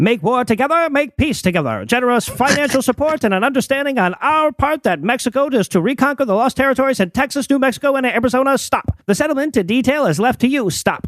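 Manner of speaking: put-on old-timey dramatic reading voice. Reading a telegram's text aloud, old-timey voice. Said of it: "make [name] read this in an old-timey voice".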